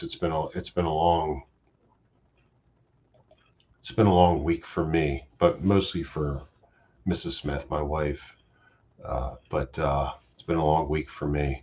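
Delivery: hoarse, worn-out voice, sounding like it's giving out. Talking to viewers after a long week: hoarse, losing voice. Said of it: "you guys can tell I'm losing my voice".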